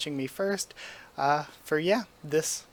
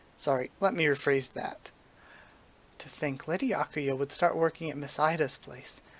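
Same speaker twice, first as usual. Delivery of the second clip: normal talking voice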